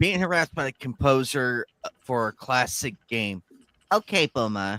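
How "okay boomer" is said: put-on Valley Girl accent. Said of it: "Try to do it with the Valley Girl accent".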